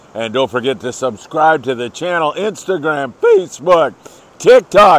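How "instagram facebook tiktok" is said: loud voice cracking and breaking partway through. Show host listing social channels to subscribe to, voice cracking. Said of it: "as my voice cracks".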